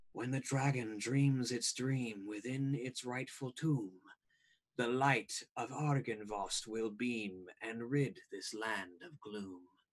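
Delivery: breathy, soft, hushed half-whispering. Voicing a mysterious voice that half-whispers to a player character: half-whispering voice. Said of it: "this whispering voice whisper to you".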